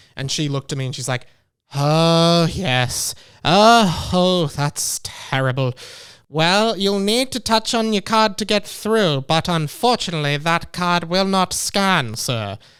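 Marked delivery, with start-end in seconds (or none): 1.8-12.6 slow, antiquated eighteen-hundreds style of speech. Retelling what a train company worker said: old-fashioned eighteen-hundreds way of speaking. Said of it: "she speaks like she's in, she lives in the eighteen hundreds".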